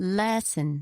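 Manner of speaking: LES stressed in lesson, with falling tune. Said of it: "This one is on the first syllable".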